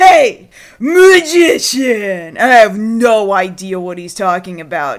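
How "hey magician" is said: put-on loud, sloppy, rowdy, drunken shout. Retelling a drunk guy pointing and shouting: imitating a drunk guy. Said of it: "some really drunk guy walked past me ... and he goes".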